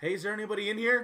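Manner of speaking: very loud, high-pitched shouting. Voicing someone who comes in and shouts up the stairs: shouting up. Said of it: "come in and shout up".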